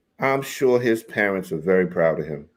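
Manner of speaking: dry sarcasm posing as sincere, mock-sincere tone. Commenting on a staged engagement photo shoot: sarcastic. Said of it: "I'm being sarcastic".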